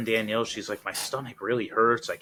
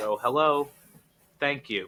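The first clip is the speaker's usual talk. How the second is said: imitated Southern accent; 3 semitones higher than usual. Speaker quoting what a woman is heard saying, southern accent. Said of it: "you hear her say in a in a southern accent".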